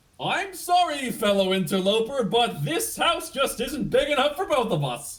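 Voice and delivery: very high, very loud, shrill, booming sing-song call. Voicing an unseen figure calling down from upstairs: voice calling out from upstairs. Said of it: "you hear a voice kind of call out".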